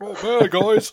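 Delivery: very high-pitched put-on voice. Answering the host's greeting on behalf of an absent guest: imitating Mike. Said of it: "you make your best in-, imitation of Mike".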